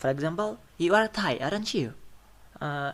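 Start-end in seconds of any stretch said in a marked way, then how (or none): 0.8-2.0 rising tone, high and loud. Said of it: "So we will use rising tone".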